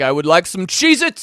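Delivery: fancy, very distinguished posh accent, projected. Joking about how to say Cheez-It, showing a very distinguished accent. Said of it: "you have to use a very distinguished accent".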